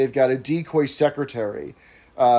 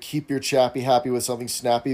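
ordinary delivery

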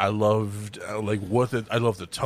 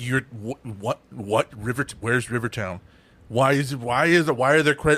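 acted furious outburst, angry ranting. Retelling watching the movie end on credits: imitating own furious outburst. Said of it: "I flipped shit".

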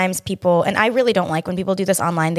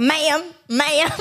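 put-on Southern accent; 9 semitones higher than usual. Mimicking how the listener called out at a loud restaurant, imitating a Georgian accent. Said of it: "In your freaking Georgian accent".

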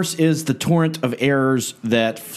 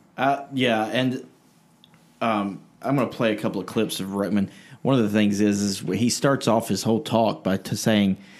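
usual speaking voice

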